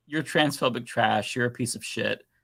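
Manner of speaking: plain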